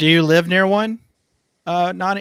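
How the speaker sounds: gentle called-out voice. Calling out to someone who may not answer, yelling. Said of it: "I don't know why I'm yelling".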